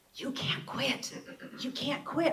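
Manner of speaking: soft, hushed, breathy whisper. Retelling a phone call with a supervisor: imitating a whisper. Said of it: "like he's whispering into the phone".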